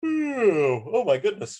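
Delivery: mid-yawn, very high, loud, stretched oh. Lecturing on moods and emotions, the speaker keeps yawning today. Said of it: "I'm yawning so much today".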